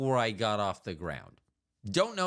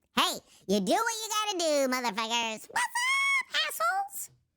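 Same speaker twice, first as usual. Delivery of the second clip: put-on very high, swooping, childlike little creature voice. Speaker keeps cursing in a voice he enjoys doing; childlike non-adult voice. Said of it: "it doesn't sound like an adult".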